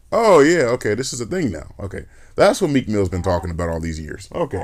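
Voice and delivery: ordinary talk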